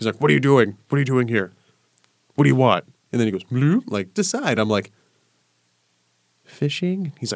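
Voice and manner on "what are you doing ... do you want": mock fast, angry villager voice. Retelling a mad creature confronting the speaker while fishing: imitating an angry villager. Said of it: "you know when they're mad".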